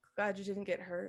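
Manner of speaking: muttering quietly under breath. Voicing a character turning her back and walking out: muttered under her breath. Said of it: "under her breath".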